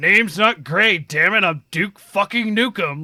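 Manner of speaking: fed-up frustrated outburst. Quoting a game hero who is annoyed that nobody knows him: frustrated Duke Nukem voice. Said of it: "he's so frustrated 'cause nobody knows him".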